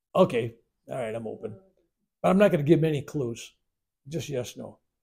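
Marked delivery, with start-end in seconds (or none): none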